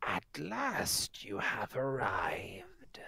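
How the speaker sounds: put-on crackling old crone voice, swooping in pitch. Narrator voices a crone in a tent greeting new arrivals, crackling old crone voice. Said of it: "Her voice crackles like dry weeds".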